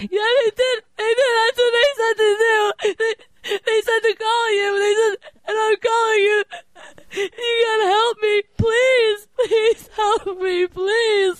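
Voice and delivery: high, breathy, frantic fake sobbing.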